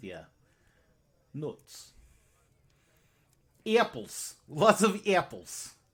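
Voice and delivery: put-on loud Russian-accented speech. In a role-play, describing the food they eat, in a russian accent. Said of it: "nuts with a Russian accent".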